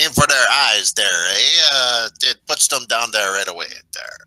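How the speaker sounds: very loud, high-pitched put-on French accent. Redoing a character's advice to aim for the eyes: French accent. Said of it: "the French accent there".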